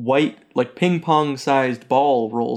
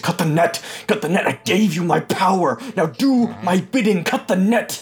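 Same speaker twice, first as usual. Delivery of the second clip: high, angry, furious commanding voice, repeated; 6 semitones higher than usual. Playing a voice heard from inside a backpack, in an angry commanding voice. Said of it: "you just hear angrily in your voice".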